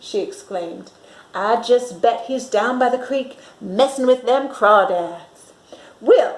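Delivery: plain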